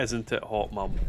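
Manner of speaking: ordinary talk, nothing marked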